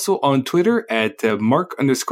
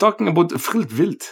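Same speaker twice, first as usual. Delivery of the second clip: put-on Norwegian accent, pitched higher; 3 semitones higher than usual. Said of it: "that's me attempting a, uh, Norwegian accent".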